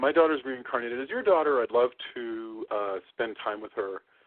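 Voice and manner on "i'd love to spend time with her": ordinary talk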